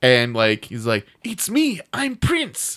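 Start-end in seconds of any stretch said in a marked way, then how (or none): 1.2-2.8 put-on European accent, higher. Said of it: "I have some kind of European accent".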